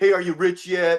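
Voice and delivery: put-on mocking, jeering tone with laughter. Retelling the taunt from people around the dinner table: imitating people mocking. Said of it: "people around me laughing".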